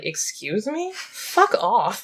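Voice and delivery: very slow, muttered under the breath. Retelling a friend's reaction during a film screening: muttering under her breath like Lily. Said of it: "vocally under her breath".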